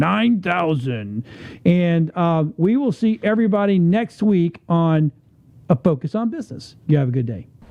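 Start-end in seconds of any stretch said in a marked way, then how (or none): 0.0-1.2 "nine thousand" drawn out slow, savored. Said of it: "I love that nine thousand".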